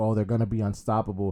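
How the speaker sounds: ordinary talk, nothing marked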